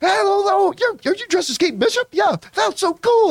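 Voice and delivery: mock-jovial chatter. Recounting a man greeting them before a picture: imitating jovial chatter. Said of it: "Like just this jovial".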